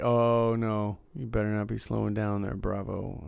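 ordinary talk

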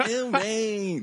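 "ew" with a long, stretched-out "man". Teasing a co-host about his new catchphrase with an impression of Keith. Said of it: "that's your impression of me?".

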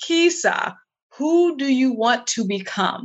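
put-on voice echoing as if inside head. Talking to herself, Kisa, in another woman's voice: imitating her booming voice. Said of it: "she has this booming voice".

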